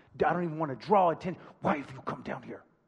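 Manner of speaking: low, near-silent scolding hiss. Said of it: "Like, like almost silent".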